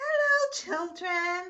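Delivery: sugary sweet voice at a very high pitch. Someone in the hall greets the children, in a sweet voice. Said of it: "somebody said in a sweet voice".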